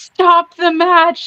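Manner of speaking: desperate yelling, pitched high. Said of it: "he yelled".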